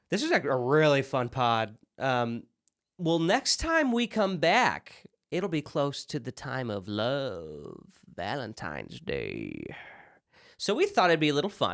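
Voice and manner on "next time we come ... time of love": eerie, unsettling put-on creepy voice. Podcast host teasing the next episode to her co-host, creepy voice. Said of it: "That was a little creepy".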